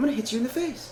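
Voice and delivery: very high-pitched tough-guy voice in falsetto. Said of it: "he has almost like a high-pitched voice".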